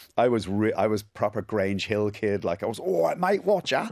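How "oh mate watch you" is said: put-on London Cockney accent, much higher. Recalling his younger self at an irish school: cockney accent. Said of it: "walking around with a Cockney accent".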